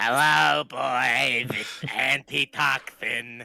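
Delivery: put-on full raspy chain-smoker voice, "boys" drawn out. The slime potion greets the boys, in a full-on smoker's raspy voice. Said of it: "full-on smoker's raspy voice".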